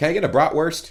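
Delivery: very high-pitched, thick, heavy American accent. Showing how their pronunciation slips, in a strong american accent. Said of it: "my enunciation skills sound very American".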